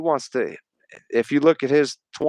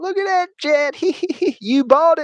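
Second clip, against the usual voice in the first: much higher, laughing mock televangelist preacher voice. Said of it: "there's videos of him laughing, saying".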